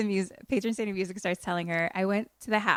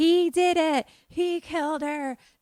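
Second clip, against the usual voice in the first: put-on hysterical, unhinged, frantic, high-pitched screaming; 9 semitones higher, 3 dB louder than usual. Recapping a scene where a woman is dragged into a room, imitating her frantic screaming. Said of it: "she's screaming and losing her mind".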